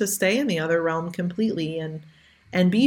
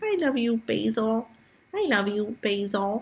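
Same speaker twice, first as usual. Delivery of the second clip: put-on slow, squeaky little two-year-old voice; 4 semitones higher than usual. Recalling a two-year-old who watched Basil being put into the ground: imitating Dava's squeaky voice. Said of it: "in her squeaky voice".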